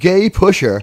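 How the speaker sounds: normal talking voice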